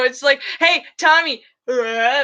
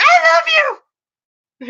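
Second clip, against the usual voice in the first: put-on shrill, very high, loud furious yelling; 5 dB louder than usual. Retelling how the two of them yelled at each other in church, retelling a scream. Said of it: "but we're also just screaming".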